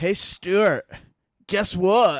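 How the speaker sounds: put-on Californian accent. Starting the show's skit, calling out to Stuart in a Californian accent. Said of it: "I got to get my Californian accent back".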